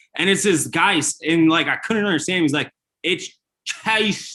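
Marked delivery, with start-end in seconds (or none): 3.1-4.4 put-on Australian accent, higher. Retelling a caller's words in an australian accent. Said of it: "an Australian accent".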